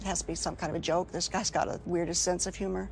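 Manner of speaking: plain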